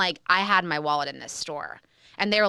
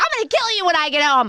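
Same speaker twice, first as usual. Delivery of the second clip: put-on angry yell, higher and louder; 7 semitones higher, 5 dB louder than usual. Retelling a heated phone row with her partner, acting out her own threat to him, as a mock-furious threat. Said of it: "I'm flipping out".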